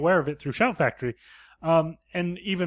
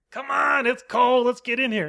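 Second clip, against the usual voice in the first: put-on yell, higher pitched; 8 semitones higher, 3 dB louder than usual. Retelling a movie scene, wives calling from inside the camper: imitating someone yelling. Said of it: "yelling at them".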